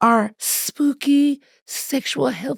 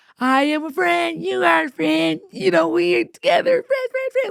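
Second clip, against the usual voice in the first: put-on pitched-up, creepy children's TV host voice; 5 semitones higher than usual. Describing a horror film's creepy kids' show host: Mister Crockett voice. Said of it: "So he's like".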